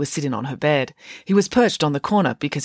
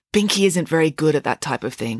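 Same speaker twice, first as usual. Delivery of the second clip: usual speaking voice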